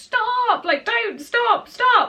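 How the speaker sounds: high, loud, pained screams.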